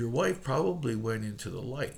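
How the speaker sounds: normal talking voice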